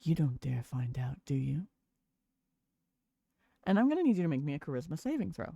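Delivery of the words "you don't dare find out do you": speaking in a whisper. A game master voices a character close up, noses an inch apart, whispering. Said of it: "And just whispers in your face".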